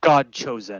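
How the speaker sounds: loud, cold, emotionless, unfeeling delivery. Voicing Reese addressing the group: loud, unfeeling voice. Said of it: "pipes up and says in a loud, unfeeling voice".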